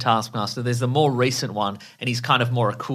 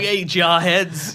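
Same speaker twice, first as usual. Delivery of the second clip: put-on tough New York street accent, higher and louder; 6 semitones higher, 5 dB louder than usual. Imitating a comic villain who talks like a New York street tough. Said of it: "talks like a, like a New York street tough".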